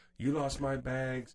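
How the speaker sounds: put-on loud, drawn-out, angry full-blown screaming tantrum. Retelling a lady at airport baggage claim: imitating a woman yelling. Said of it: "yelling and screaming in there, like".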